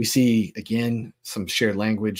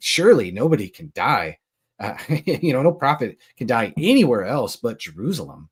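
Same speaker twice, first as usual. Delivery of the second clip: heavy sarcasm in a swooping sing-song; 3 semitones higher, 4 dB louder than usual. Retelling a quoted line about prophets and Jerusalem: imitating a sarcastic tone. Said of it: "there's this real sarcastic tone".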